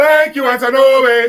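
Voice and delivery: very loud, high, put-on Nigerian accent. Leading a group in thanking Antonobi, in a Nigerian accent. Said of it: "say in a Nigerian voice".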